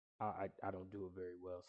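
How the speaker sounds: normal talking voice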